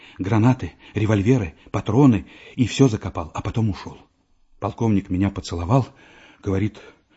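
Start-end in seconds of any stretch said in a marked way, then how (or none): none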